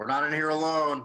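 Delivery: high-pitched yelling. Yelling back through a narrow crack to companions outside: yelling back through a crack. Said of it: "I yell back through the crack".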